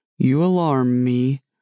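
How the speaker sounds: plain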